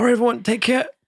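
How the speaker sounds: crying while speaking. Handing out plates to everyone in character: tearful in-character voice. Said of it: "he's crying".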